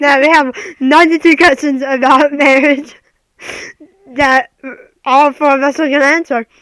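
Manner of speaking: speaking through laughter. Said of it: "My stomach hurts".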